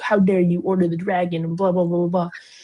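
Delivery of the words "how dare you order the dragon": indignant, offended, mad, upset outburst. Summarizing a story, acting out a character who comes in, mock-angry and upset. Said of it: "comes in all mad and upset".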